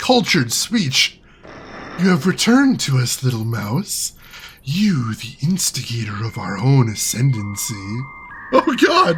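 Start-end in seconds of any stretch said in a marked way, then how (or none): 2.0-8.0 very low, rumbling, layered swarm-like voice. Reading aloud the unnerving creature, woman and swarm in one, in Malvina's rumbling, interwoven swarm voice. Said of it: "A thousand rumbling voices all interwoven".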